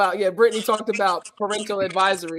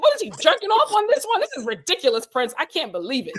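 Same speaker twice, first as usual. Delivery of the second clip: put-on angry woman's voice, pitched-up, swooping, ranting; 8 semitones higher than usual. Retelling how a mother burst in, imitating an angry mother. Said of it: "And she went off".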